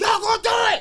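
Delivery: very high, loud, pumped-up, hyped cheer. Retelling neighborhood friends cheering before the first show: imitating hyped-up friends cheering. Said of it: "everybody was so high energy".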